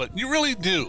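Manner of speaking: stress on "really".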